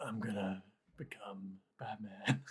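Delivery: whispered character voice. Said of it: "is that really your best Batman".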